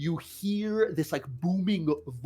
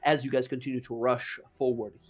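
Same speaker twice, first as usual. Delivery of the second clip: usual speaking voice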